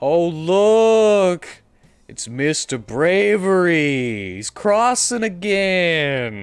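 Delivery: very loud, high, mocking sarcasm with drawn-out "look". Game master voices something calling up from below the bridge, sarcastic voice from below. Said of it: "It is the sarcasm".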